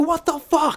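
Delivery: very high-pitched, freaked-out panic. Retelling reacting to a bird in the back room, imitating freaking out. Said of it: "I'm freaking out about this".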